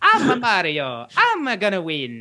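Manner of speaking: slow, drawn-out, swooping-pitch cartoon plumber voice. Chatting with friends about Mario's voice, jumping in with a Mario voice. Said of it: "une petite voix aiguë".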